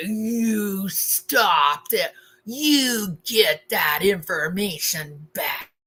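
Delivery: raging rabid-dog growl, drawn-out "you". Recounting a phone call where he was raging, the speaker imitates him growling. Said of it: "him growling like".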